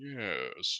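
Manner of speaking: low, deep, slow, drawn-out delivery. Imagining two villains meeting on screen: Beast Wars Megatron voice. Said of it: "Beast Wars one being like".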